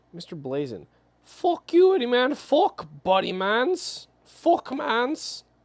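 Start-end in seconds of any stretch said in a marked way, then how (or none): 1.2-5.4 fake Canadian accent, very high-pitched and drawn out. Speaker does an accent for a man from Canada, put-on Canadian accent. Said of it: "You think he's like Irish?".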